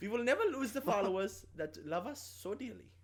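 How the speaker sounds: high put-on German accent. Host answering a co-host's complaint during a Jojo Rabbit episode, offensive fake German accent. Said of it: "you're putting on a very offensive accent".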